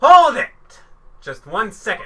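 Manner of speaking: loud, high shouting. In an acted scene, one character cuts into another's questioning, yelling. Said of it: "Stop yelling at me like an a-hole".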